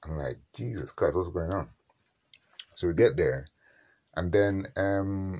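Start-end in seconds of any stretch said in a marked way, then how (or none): none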